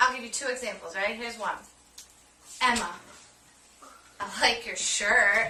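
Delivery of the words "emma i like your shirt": slow, with an almost sarcastic edge. Showing Theo how tone changes a compliment, first example: almost sarcastic. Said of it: "It's almost sarcastic".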